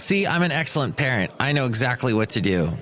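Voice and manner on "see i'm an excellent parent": usual speaking voice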